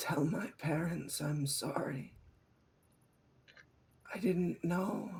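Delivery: high, close, dying whisper. Game master as a tied-up man whispering into a player's ear. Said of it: "He whispers into your ear".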